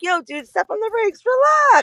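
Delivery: very high, jokey, friendly, playful teasing tone. Retelling own reply to a rude commenter: imitating own joking tone. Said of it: "in a funny way".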